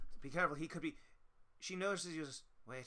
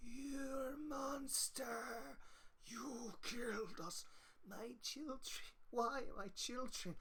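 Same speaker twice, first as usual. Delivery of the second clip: very high, ghostly, reverberating chorus of creature voices; 10 semitones higher, 4 dB quieter than usual. Describing dark creatures surrounding you as they speak, in echoing creature voices. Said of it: "it's just these echoing voices".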